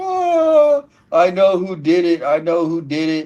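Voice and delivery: mock full-on crying, high swooping wail, drawn-out whoa. Retelling how a woman in a truck spoke: imitating full-on crying. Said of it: "in a full-on crying".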